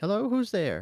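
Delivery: tiny, small, very high-pitched voice. Game master voices a woman answering a knock through a cracked door, small female voice. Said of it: "you hear a small female voice beyond it".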